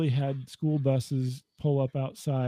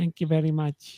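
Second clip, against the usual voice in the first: funny put-on foreign-man voice; 2 semitones higher than usual. Retelling a comedian's stand-up bit: Andy Kaufman Foreign Man voice. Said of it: "he just did a funny voice".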